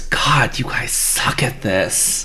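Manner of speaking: slow, breathy, drawn-out whisper rising up. Voicing a voice rising from glowing blue orbs: whispering voice from the orbs. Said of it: "a voice whisper up from the little blue orbs".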